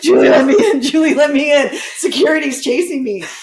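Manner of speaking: frantic, panicked, high, loud pleading. Retelling a naked customer at the door at 2 a.m.: imitating a panicked man. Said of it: "he was panicked".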